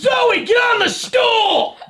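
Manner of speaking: shouting. Right after saying not to yell at dogs, the speaker yells an order at zoe. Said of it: "Don't yell at my dog".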